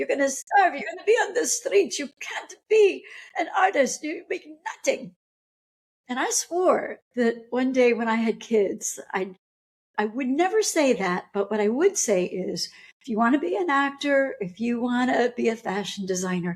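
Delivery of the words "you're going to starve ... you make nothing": put-on thick, heavy Polish accent, quick and high. Recalling what an immigrant mother said back then, in a thick Polish accent. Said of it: "in a very thick Polish accent".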